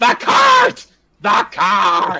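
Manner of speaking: very loud, very high, frantic, unhinged shrill screaming. Describing what Perrin would do in the game, screaming as Perrin. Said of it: "start screaming".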